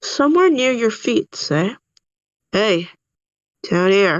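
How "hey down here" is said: low grumbling frog voice. Game narrator voicing a tiny frog calling up from the marsh: low grumbling frog voice. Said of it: "a low grumbling voice".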